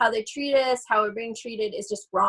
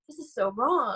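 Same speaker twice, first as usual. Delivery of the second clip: put-on sobbing. Retelling watching a classmate pull out a wolf's heart: retelling own crying.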